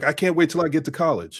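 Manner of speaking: plain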